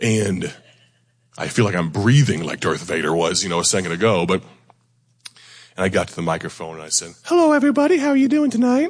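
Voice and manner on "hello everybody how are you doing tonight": comic put-on voice, very high and loud. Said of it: "I couldn't keep it up and, and preach that way".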